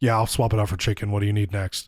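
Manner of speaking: grudging, grumpiest-sounding counter worker voice. Retelling a bad ordering experience, the speaker quotes the worker who came over, imitating a grumpy voice. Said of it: "the grumpiest sounding real human comes over".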